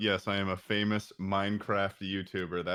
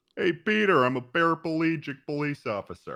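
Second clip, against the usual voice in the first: bold, loud cartoon voice with swinging pitch; 7 semitones higher, 5 dB louder than usual. Showing the others a Joe accent after they ask to hear it: Joe Swanson voice. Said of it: "I can do a pretty good Joe accent".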